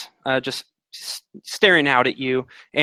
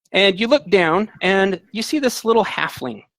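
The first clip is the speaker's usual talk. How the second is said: ordinary talk, nothing marked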